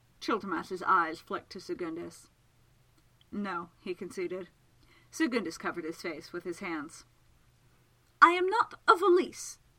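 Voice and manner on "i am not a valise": very high, very loud, shrill, drawn-out complaining tone. A man objects to others discussing him in front of him; complaining. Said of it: "he complained".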